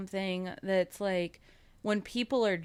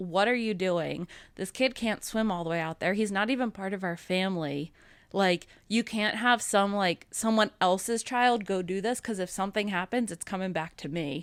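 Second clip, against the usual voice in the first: ordinary delivery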